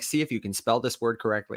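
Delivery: normal talking voice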